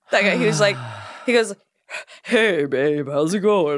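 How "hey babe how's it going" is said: very slow, deepened, faked vaguely Southern drawl. Imitating the voice an actor was doing: imitating a deepened, vaguely Southern voice. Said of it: "the voice, uh, that he was doing?".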